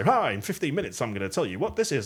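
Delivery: radio DJ patter, high and swooping. Speaker showing how a presenter shouldn't open a talk: radio DJ voice. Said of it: "like that kind of DJ voice".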